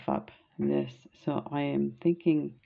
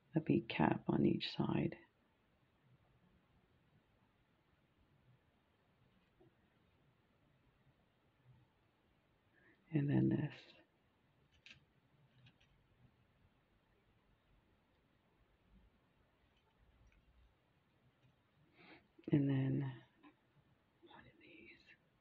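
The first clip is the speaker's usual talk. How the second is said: hushed whisper, much quieter; 9 dB quieter than usual. While beading, the speaker walks through adding each bead, whispering. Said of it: "I don't know why I'm whispering".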